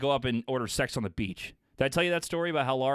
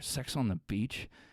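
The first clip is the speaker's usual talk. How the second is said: slow, soft, hushed half-whisper; 3 semitones lower, 5 dB quieter than usual. Retelling ordering a drink at a bar: imitating own whisper. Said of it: "I kinda whisper".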